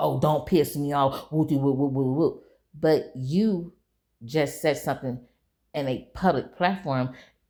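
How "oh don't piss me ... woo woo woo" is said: mocking, sarcastic imitation of a tough-sounding voice. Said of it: "So now you wanna say".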